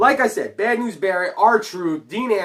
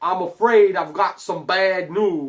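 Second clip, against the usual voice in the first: put-on poor English accent, stretched out. Talking wrestling predictions, doing the wrestler: bad Bad News Barrett impression. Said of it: "I'm really bad at an English accent".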